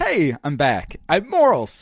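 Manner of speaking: silly, goofy, uptight, prissy, sing-song voice. Dropping the deep voice contest to show morals again, goofy uptight voice. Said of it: "my goofy uptight voice".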